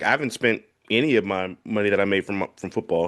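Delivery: ordinary talk, nothing marked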